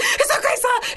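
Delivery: startled, high, anxious calming tone.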